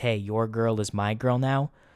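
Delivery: put-on dead serious tone. Acting out an imagined line from a fighter taking his girl: pretending to be dead serious. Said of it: "he's dead serious and he says".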